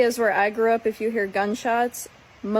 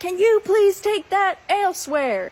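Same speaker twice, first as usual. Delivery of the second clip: put-on very thick Southern accent with very high voice; 10 semitones higher than usual. Retelling repeating her request to some guys who shouted back, in a heavy Southern accent. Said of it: "in my most heaviest southern accent".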